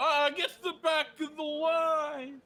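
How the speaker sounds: very high, shrill, loud, drawn-out, angry crowd yelling. Voicing people in a line who yell at the players: people yelling in a queue. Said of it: "the people are yelling at you".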